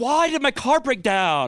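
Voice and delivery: put-on exasperated, fed-up annoyed guy voice. Demonstrating the voice he does for everybody, in an annoyed guy voice. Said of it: "that's it's annoyed guy".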